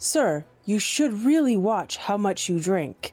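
polite, direct, spoken outright. Leaning in to address someone in character: speaking loudly. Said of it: "but speak loudly and just be like".

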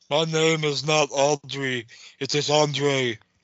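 very slow, drawn-out, cotton-mouthed words. Correcting a misspelled name in the comments: Andre the Giant voice. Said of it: "The best way to do an Andre impression".

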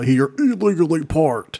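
ear-splitting robot voice. Joking about the robots in RoboCop, doing an ED-209 robot voice. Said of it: "Like his voice is like".

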